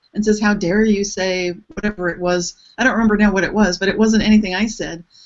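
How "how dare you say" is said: normal talking voice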